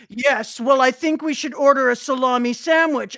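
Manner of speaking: very loud, booming, haughty, overdramatic pronouncement. Imitating a manga character speaking with a bombastic side-eye: imitating a character's dramatic side-eye delivery. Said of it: "shift his chin down and then lift his eyes only and be like".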